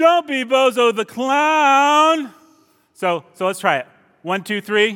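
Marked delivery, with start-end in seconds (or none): 0.0-2.3 deliberately annoying, very slow, high, stretched drawl. Showing the audience how to say a line: really annoying voice. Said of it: "I need you to say it really annoying, like".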